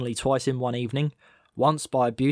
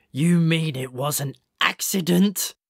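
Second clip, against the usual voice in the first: pained, rasping, dying voice; 3 semitones higher than usual. A narrator reads a badly injured badger's question to Malcolm, rasping. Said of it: "It rasped".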